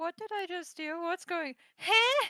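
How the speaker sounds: puzzled, bewildered tone. Player voicing his character staring at his hands after casting a spell, confused. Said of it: "looks so confused, just like".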